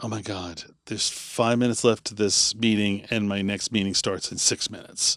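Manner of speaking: hushed, quiet inner-thought voice.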